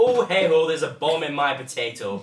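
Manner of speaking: terrible put-on Irish accent, very loud. Speaker shows what the accent sounds like to them, in a bad Irish accent. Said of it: "Irish accent because it sounds like".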